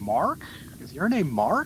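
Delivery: horrible put-on American accent, loud, high. Imitating americans asking about his name, horrible american accent. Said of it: "That was the most horrible American accent".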